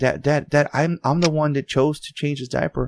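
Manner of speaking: mock frightened, stammering, pleading voice. Retelling a daughter's reply after an outburst: imitating a scared daughter. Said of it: "my daughter's, like, so scared and shit 'cause she's like".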